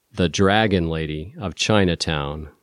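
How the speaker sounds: plain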